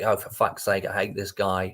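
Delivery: ordinary talk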